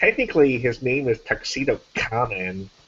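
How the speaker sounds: soft, snooty, know-it-all anime-style voice. During a game round, a player switches to a snooty anime know-it-all voice. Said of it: "my snooty anime know-it-all voice".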